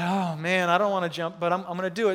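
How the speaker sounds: ordinary talk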